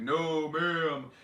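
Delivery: mock-stern scolding voice. Telling off a dog that has done something wrong after coming home, in a put-on stern voice. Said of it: "put that stern voice on".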